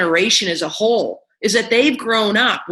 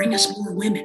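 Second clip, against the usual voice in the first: put-on whisper, quieter; 6 dB quieter than usual. Retelling how teachers asked for more women: imitating someone whispering. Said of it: "Why are we whispering?".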